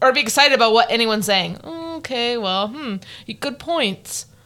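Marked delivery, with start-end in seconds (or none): 1.6-4.2 very slow, hesitant, evasive, noncommittal voice. Imitating how an evasive player agrees without committing: imitating Kylan's evasive agreeing. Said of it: "he would just agree but never really say a hundred percent commit".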